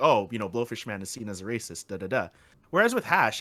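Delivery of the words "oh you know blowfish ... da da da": ordinary talk, nothing marked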